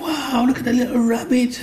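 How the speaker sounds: put-on gasping, excited child voice.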